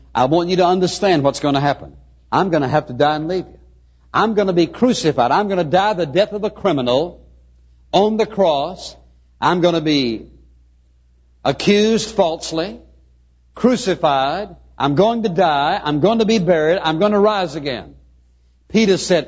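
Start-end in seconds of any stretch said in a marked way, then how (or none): none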